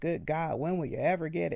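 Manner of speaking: put-on frustrated deity voice. Imitating the idea that God is frustrated with us: imitating a frustrated God. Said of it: "God is frustrated with us".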